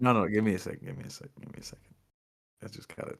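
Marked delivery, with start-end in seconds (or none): 0.0-1.9 choked up, struggling to hold back tears. Pausing while discussing a sad story chapter, asked if crying: choked up, near tears. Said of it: "you crying?".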